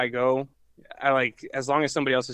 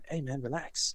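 put-on English British accent; 11 dB quieter than usual. Retelling a british friend telling him to relax: imitating a british accent. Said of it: "he's with his accent".

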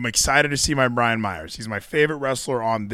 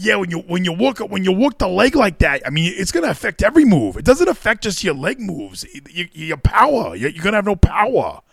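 pitched-up, veteran ringside commentator voice; 7 semitones higher than usual. Imitating a wrestling commentator explaining leg work: Taz impression. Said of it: "Was that a good Taz impression?".

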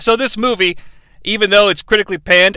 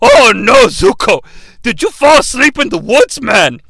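put-on loud, unhinged old man voice; 4 semitones higher, 5 dB louder than usual. In a parody scene, Uncle Iroh questions Zuko; crazy grandpa voice as Uncle Iroh. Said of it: "the voice that I used for the crazy grandpa".

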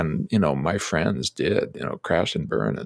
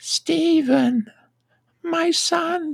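put-on very high, frail, elderly old woman voice. Quoting what she said on seeing him in a wheelchair: frail old lady voice. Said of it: "I'll say it in her voice, ... this frail old lady voice".

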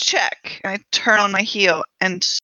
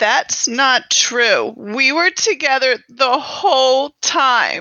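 tearful, pitched-up speech through sobs; 5 semitones higher than usual. A character in a mystery scene with a dead body, crying while talking. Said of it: "and I'm just crying again".

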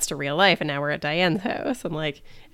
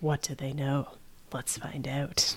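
hushed, sinister, soft and menacing inner voiceover; 6 dB quieter than usual. Speaker recapping an episode's voiceovers in BoJack's head, mimicking BoJack's sinister voiceover. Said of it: "it's in this like very sinister voice of like".

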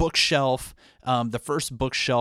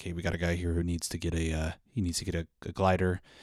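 murmured, much lower pitched and much quieter; 5 semitones lower, 5 dB quieter than usual. Speaker retelling a woman speaking into a microphone about his glider, retelling a murmur. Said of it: "she murmurs something into the microphone like".

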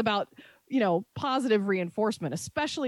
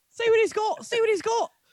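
poor put-on Scottish accent, very high pitch; 12 semitones higher than usual. Urged by the others to try it, the speaker attempts a bad Scottish accent. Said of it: "That wasn't even very good".

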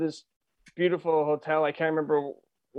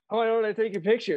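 staged, insincere, pitched-up, unnatural fake delivery; 5 semitones higher than usual. Retelling a movie character's line, imitating a fake, insincere line. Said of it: "so unnatural the way he said it".

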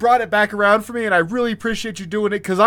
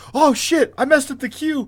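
mock flustered panic, high-pitched and blurted; 5 semitones higher than usual. Retelling panicking over a missed cue: retelling own panic. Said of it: "I panicked and, like, looked through and was like".

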